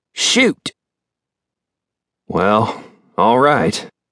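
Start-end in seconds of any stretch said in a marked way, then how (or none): 2.3-3.9 nervous, anxious tone. Mitch answers the cattle buyer, who has covered his bet: nervous. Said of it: "Mitch said nervously".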